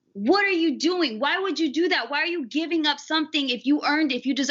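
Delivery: ordinary talk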